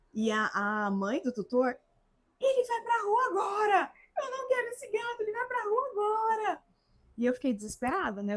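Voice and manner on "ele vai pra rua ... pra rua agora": enraged, very high, angry shouted yelling. Recounting the tutor's mother's reaction after the cat scratched, retelling a shout. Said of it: "E aí era todo mundo gritando".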